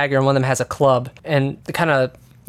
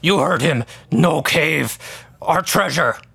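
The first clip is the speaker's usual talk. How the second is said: goblin character voice. Game master voices the goblin on the right answering the cave jumpers: deeper goblin voice. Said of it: "in a deeper voice".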